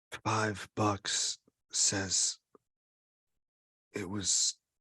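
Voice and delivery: secretive, very slow, drawn-out whisper. Playing a character leaning over to bet a friend quietly: whispering. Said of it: "whispers so that the sensitive can't hear me".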